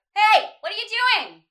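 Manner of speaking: high, loud nasal ping pushed into the nose. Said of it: "I would place it and ping it, like, right in this part of my nose".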